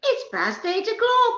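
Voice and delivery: put-on very high, very slow Scottish accent, sing-song. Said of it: "Just like".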